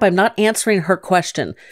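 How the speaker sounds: usual speaking voice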